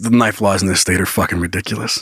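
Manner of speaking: low, hushed, confiding half-whisper. Retelling what the officer half-whispered, retelling a half-whisper. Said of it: "Like he whispers that".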